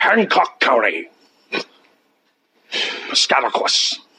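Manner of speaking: fake mixed Scottish and Russian accent. Reading county names from a NAWAS phone list, Sean Connery Scottish-Russian accent. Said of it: "as Sean Connery from The Hunt from Red October".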